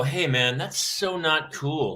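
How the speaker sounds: usual speaking voice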